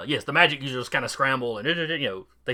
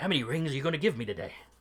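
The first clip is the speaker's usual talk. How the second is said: put-on whisper, quieter; 6 dB quieter than usual. Imitating a player asking how many rings he'll get: imitating Jay whispering. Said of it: "And then he whispers to you".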